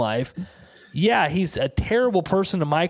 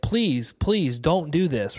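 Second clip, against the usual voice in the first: put-on child voice, desperate and begging. Retelling a movie scene where a kid begs his attacker: imitating a begging kid. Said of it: "the kid's begging him".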